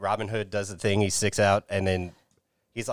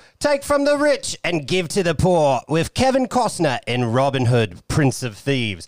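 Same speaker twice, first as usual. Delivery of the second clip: put-on British accent, pitched up; 7 semitones higher, 6 dB louder than usual. Reading a movie synopsis tagline aloud: British accent. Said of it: "that British accent that I just did".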